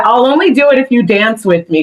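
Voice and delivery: ordinary talk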